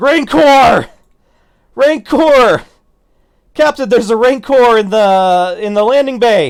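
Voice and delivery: breathless panicked alarm, very high, very loud. Voicing a character who comes running up from a turbo lift, breathing heavy. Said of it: "he's breathing heavy".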